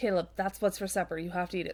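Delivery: ordinary talk, nothing marked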